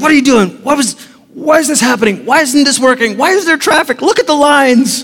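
mock exasperated, frustrated tone. Acting out someone stuck in traffic and lines: imitating frustrated anger. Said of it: "Anger, frustration, irritation".

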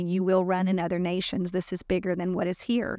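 normal talking voice

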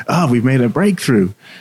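put-on happy, cheerful voice. Retelling a patient's session, the speaker voices the psychiatrist, imitating a happy psychiatrist. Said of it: "the psychiatrist gets all happy".

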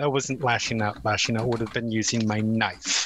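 very low, just-audible grumble under the breath. Voicing a character replying to the lashing-out remark: muttered quietly. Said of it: "muttered just, like, loud enough so it can just be heard".

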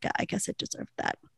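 sheepish soft mutter.

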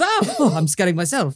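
mock panicked voice. Retelling a scene where a character panics in the woods: imitating someone panicking. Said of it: "he's kind of panicking and he goes".

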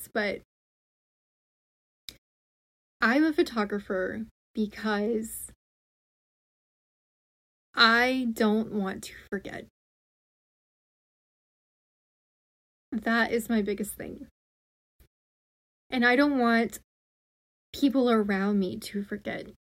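holding back emotion, voice catching. Explaining in an episode why they are a photographer, choking up. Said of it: "I literally cannot get this out".

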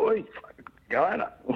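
very high, excited, adrenaline-charged yell. Retelling calling out to a mate across a gorge: retelling own yell. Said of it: "So I yelled out to Adam and go".

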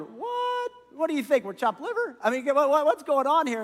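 put-on mad, high, offended indignation. Acting out the other ten disciples getting mad: imitating mad disciples. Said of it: "the other ten get pretty mad".

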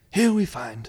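nature film narration voice. Showing the voice used for a sketch character: David Attenborough voice. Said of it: "the documentary guy".

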